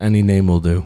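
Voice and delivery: exasperated, eye-rolling delivery. Voicing a guard who rolls his eyes: exasperated guard.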